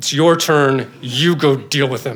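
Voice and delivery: low, slow words forced through gritted teeth. A husband retells what his wife said to him, imitating speaking through gritted teeth. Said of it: "she says through gritted teeth".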